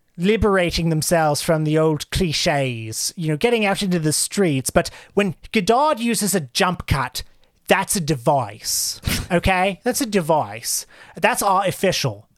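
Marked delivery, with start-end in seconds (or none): 4.7-12.1 put-on British accent. Retelling what an Australian man said, given a put-on British accent. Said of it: "I give him a British voice".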